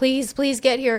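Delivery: play-acted crying, tearful begging, repeated please. Retelling a mother's 911 call about her daughter, imitating crying and begging. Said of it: "very just like crying and begging".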